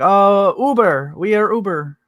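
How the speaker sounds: loud, very slow broken English, word by word. Retelling what a family said when asked why they were there: imitating broken english. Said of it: "really broken English".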